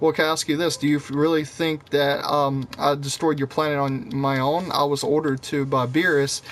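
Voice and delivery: plain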